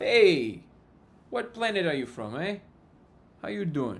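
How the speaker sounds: loud, high, terrible put-on New Jersey Italian accent. Joking about Italians, slipping into a bad New Jersey Italian accent. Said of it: "That's my New Jersey Italian accent".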